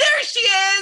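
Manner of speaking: very high-pitched, shrieking scream. Retelling screaming at the TV during a show: imitating own screaming. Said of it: "Me and my mom both screamed".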